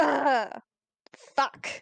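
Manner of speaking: grunting swear word in pain. Playing a hurt character reacting to the pain: grunting in pain in character. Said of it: "grunt in pain".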